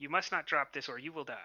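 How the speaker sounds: very stern. Player's character addressing the commander, very stern. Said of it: "look at the commander very sternly and say".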